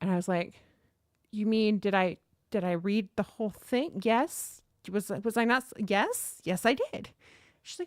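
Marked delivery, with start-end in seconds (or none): none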